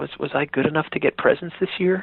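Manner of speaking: put-on small, sweet, innocent little kid voice. Retelling asking mom and dad on Christmas Eve as a child, imitating a sweet little innocent voice. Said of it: "that sweet little innocent voice".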